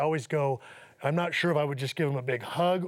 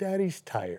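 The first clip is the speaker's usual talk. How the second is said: put-on little, small two-year-old toddler voice; 4 semitones higher than usual. A father repeating what his two-year-old son said to him: little child's voice. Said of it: "out of his little voice say".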